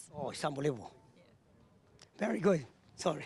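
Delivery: low, quiet voice choked up with emotion. Asked what winning these winter meet titles means, choked up with emotion. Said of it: "Don't get choked up on me".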